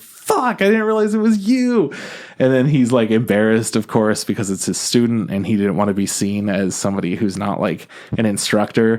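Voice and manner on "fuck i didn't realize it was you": very high, screaming outburst. Retelling a student running into her teacher, the speaker quotes her, imitating her screaming. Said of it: "she's screaming".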